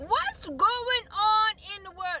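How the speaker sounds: high, slow exasperated cry.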